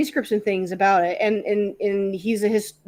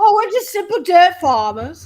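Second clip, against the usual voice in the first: put-on British comedy accent, higher and louder; 10 semitones higher, 7 dB louder than usual. Doing a silly peasant voice from a Monty Python sketch. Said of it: "You sound like the Monty Pythons".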